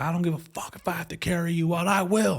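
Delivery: put-on fired-up coach yell, mild, high-pitched. Retelling what the high school football coach screamed: imitating coach screaming. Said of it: "The coach was screaming at us".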